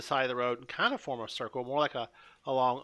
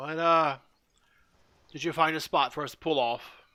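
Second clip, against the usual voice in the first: put-on large, giant-like character voice; 2 semitones higher than usual. A game narrator voices a half-giant party member, half-giant Goliath voice. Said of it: "again says in that voice".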